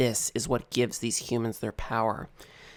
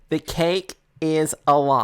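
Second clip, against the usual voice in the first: drawn-out, very slow, super loud shout; 4 semitones higher, 4 dB louder than usual. Yelling from inside the cake so everyone can hear: yelling super loud. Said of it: "as I yell out super loud".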